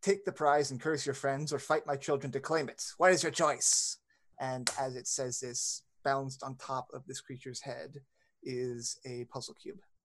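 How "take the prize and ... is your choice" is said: loud, booming, ringing yell like a disembodied voice. Voicing a disembodied voice in a chamber: disembodied voice yelling. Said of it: "it yells in common".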